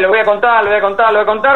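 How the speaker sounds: plain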